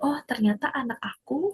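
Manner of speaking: quiet, soft, hushed voice.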